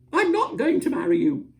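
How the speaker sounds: piercing, shrill, very high, very loud cry. Reading a story aloud, as the wax lady in an argument: shrill, high voice. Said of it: "said the wax lady in a shrill, high voice".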